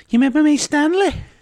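very high, loud Liverpool Scouse accent. Asked to do a scouse accent, saying a liverpool quote in it. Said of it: "Can you do a Scouse accent and say that?".

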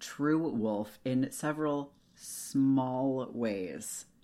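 "small" heavily stressed, slow and drawn out. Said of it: "Emphasis on small".

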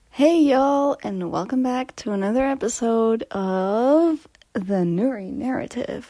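put-on American accent with of drawn out. Podcast host opening an episode of The Nuri Narrative, in an American accent. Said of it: "Why did I say that in an American accent?".

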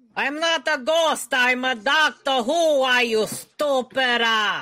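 fake Italian accent throughout. Playing a bickering Italian ghost in a game: put-on Italian accent. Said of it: "You shouldn't be trying to imitate me".

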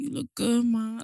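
put-on husky, smooth-talker voice. Retelling how a man met at a party greeted the speaker, imitating a husky voice. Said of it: "that husky voice".

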